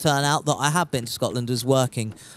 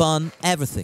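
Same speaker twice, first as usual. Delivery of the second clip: ordinary talk, nothing marked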